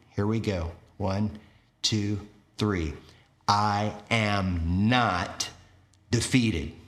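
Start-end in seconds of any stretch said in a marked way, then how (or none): 3.5-6.7 spoken out loud, am drawn out. Leading listeners in saying the words together, showing them: said out loud. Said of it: "I'm going to have you say it out loud".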